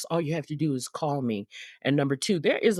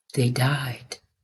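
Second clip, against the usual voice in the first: put-on whisper, lower; 3 semitones lower than usual. Retelling what a girl at a seminar leaned over and whispered: retelling a whisper. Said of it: "kinda leaned over and whispered".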